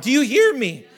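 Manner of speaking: breaking voice, cracking audibly. Addressing the listeners, voice cracking. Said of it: "My voice cracked".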